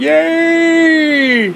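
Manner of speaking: high-pitched, mock gleeful, squealing delighted cheer. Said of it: "Republicans are like".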